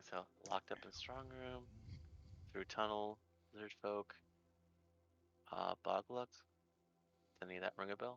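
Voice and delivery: soft, hushed half-whisper under the breath. Player character sharing what they learned with a companion: half-whispering. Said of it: "I'm whispering".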